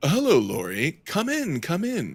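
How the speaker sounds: very slow, drawn-out, swooping, sing-song character voice. Voicing Selima greeting Lori at the door: Selima voice. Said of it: "It's been a while since I've done voice".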